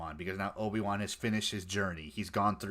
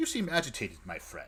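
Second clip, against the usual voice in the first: calm, condescending talking down. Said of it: "this calmly".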